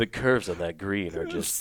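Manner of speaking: low, sultry bass announcer voice. Commenting on Chuck's golf round, the speaker slips into a sultry golf announcer voice. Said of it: "you were trying to be sexy golf guy".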